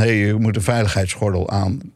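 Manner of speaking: usual speaking voice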